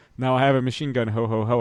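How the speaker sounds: ordinary delivery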